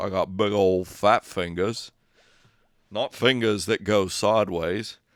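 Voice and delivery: slow character drawl, each word drawn out. Repeat your own remark about picking up the violin, this time in a Forrest Gump voice. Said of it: "in my Forrest Gump voice".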